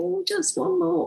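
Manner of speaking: nagging, wheedling computer-like voice.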